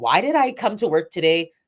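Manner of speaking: normal talking voice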